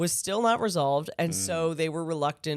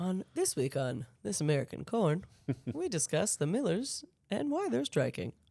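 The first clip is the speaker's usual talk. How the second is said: radio show host intro voice; 2 semitones higher, 5 dB quieter than usual. Joking about a relief corn shipment as an NPR show: This American Life host parody. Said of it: "This American corn on N P R".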